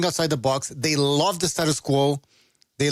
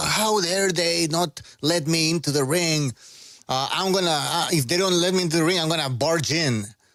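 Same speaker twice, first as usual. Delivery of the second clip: plain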